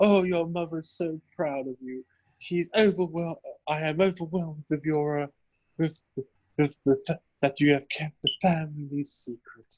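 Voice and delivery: soft whispered voice. Speaking to him as his mother's voice from the dead: whispering as dead mother. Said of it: "what language are you whispering this in?".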